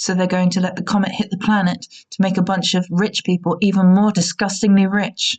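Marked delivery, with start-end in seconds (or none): none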